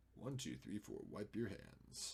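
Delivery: hushed, soft sing-song murmur with big swoops. Counting to four while editing a photo: Sulu voice. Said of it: "I say that like Sulu".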